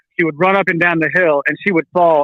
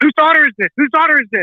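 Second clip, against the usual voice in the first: mock very high, rushed, alarmed, frantic screaming; 9 semitones higher than usual. Retelling how a panicked dad at the playground screamed: imitating a dad screaming. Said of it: "he's screaming".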